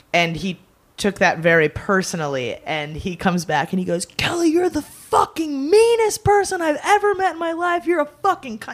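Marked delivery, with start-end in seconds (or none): 4.1-8.8 put-on, very high, shrill, angry screaming rant. Retelling how a man in the bar screamed at her, retelling a scream. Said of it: "He's like screaming".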